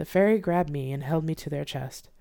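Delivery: ordinary delivery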